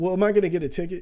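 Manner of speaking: put-on panicked voice. Retelling what she asked while cops talked to her: imitating someone panicking. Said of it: "She start panicking".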